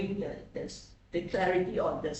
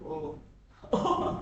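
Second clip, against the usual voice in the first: unexcited attempt at sounding eager with anticipation; 3 semitones lower than usual. Demonstrating emotions one by one, trying anticipation, unexcited attempt at anticipation. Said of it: "Doesn't sound very uh, exciting".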